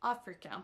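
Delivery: AF-rica with opening syllable stressed. English pronunciation lesson correcting a stress error: stress on af in africa. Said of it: "qui s'accentue sur la première syllabe".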